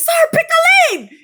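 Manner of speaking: shrill, loud, angry shouted tone. Retelling telling off a driver stuck between two lanes: imitating own angry outburst. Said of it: "and I got mad and I said".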